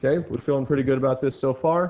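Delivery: talking quickly, rattled off.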